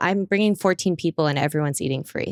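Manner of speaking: ordinary delivery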